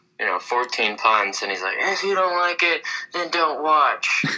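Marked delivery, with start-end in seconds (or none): 1.8-4.3 irritated, dismissive, upset, pitched-up voice. Retelling another commentator's complaint about viewers: imitating someone getting upset. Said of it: "he's just getting upset".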